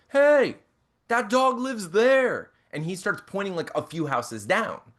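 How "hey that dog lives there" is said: mock slow, loud, high, drawn-out holler. Retelling a stranger shouting about where a dog lives: imitating someone shouting. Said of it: "shouting and he's like".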